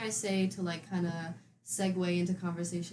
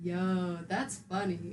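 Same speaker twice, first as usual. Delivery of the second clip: put-on flat, deadpan, unlaughing tone. Retelling how a date answered jokes without laughing: imitating a deadpan "that's funny". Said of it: "instead of laughing like a normal person, he'd just go".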